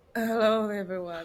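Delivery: creaky, bubbly vocal fry. Explaining a TikTok joke called bubble voice, speaker demonstrates: vocal fry. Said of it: "it's called 气泡音 with bubble".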